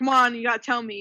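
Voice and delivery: ordinary delivery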